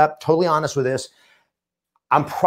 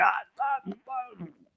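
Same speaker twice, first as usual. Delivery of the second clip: high, hushed, panicked stammer, flipping out. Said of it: "I'm totally flipping out".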